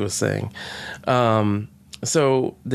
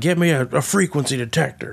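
put-on American accent, higher pitched; 3 semitones higher than usual. Retelling a scene, speaker quotes Matt Smith's next line: Matt Smith's fake American accent. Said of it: "In yet a different American accent".

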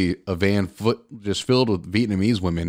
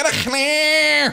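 put-on screaming, higher pitched; 3 dB louder than usual. Acting out women from a van screaming at the driver: acting out women screaming. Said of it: "they're just all screaming at you in".

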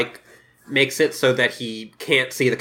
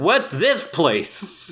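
put-on exaggerated feigned surprise, higher; 4 semitones higher than usual. Retelling how Clayton acts innocent: imitating a showy act. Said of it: "puts on a big show".

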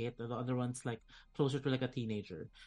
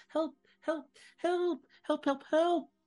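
put-on very high, loud, shrill child's shrieks; 6 dB louder than usual. Narrating a scene, the storyteller voices a child on a galloping horse in a shrill shriek. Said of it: "the shrill shriek of a child".

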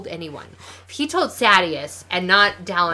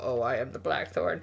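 very low, hushed put-on voice; 7 semitones lower, 8 dB quieter than usual. Retelling a scene where Adolin poses as the Blackthorn: Adolin pitching his voice lower. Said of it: "trying to pitch his voice lower".

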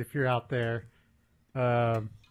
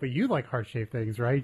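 ordinary talk, nothing marked

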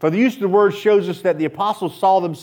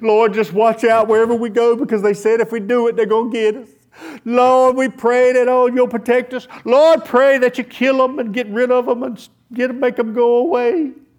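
high, loud, mock panicky voice. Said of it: "They don't cry out".

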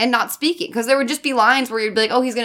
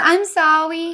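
put-on high, babyish little baby-talk voice; 7 semitones higher than usual. Describing a ten-year-old in a bad movie, quoting his line in a baby voice. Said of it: "he talks like a baby".

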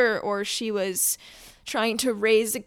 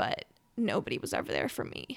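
breathy, tearful near-whisper, holding back tears; 4 semitones lower, 7 dB quieter than usual. Talking about having no family support, holding back tears. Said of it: "I'm gonna cry".

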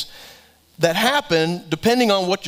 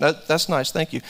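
mock flat emotionless monotone; 3 semitones lower, 3 dB quieter than usual. Imitating a loved one opening a long-wanted gift: imitating a flat emotionless reply. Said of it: "No emotion".

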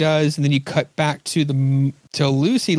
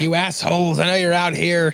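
put-on scream, higher pitch; 3 semitones higher than usual. Retelling a character running through the woods: imitating a character screaming. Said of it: "running through the woods screaming".

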